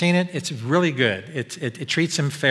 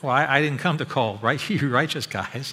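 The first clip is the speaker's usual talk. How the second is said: ordinary talk, nothing marked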